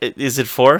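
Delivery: normal talking voice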